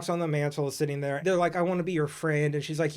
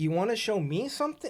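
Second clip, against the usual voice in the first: put-on innocent, high, childlike little-kid voice; 5 semitones higher than usual. Retelling a movie scene, acting out the girl's reply: imitating a childlike voice. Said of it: "She's more childlike".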